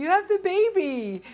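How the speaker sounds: put-on shrill, very loud, high yell, baby drawn out. Recounting calling out again to someone who couldn't hear, retelling a yell. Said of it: "And I yelled at him again".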